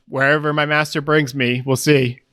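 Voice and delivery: ordinary talk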